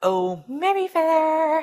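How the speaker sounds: very high, shrill, spooky princess voice. Announcing that Maddie is up next, scary princess voice. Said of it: "that was my scary princess voice".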